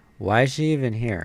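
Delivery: plain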